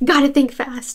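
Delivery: ordinary talk, nothing marked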